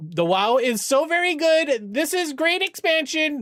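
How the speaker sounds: shrill, emotional, very high climbing yell. Charity streamer on Twitch, talking to chat: yelling. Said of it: "Sorry if I'm yelling".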